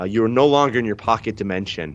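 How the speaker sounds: plain reading voice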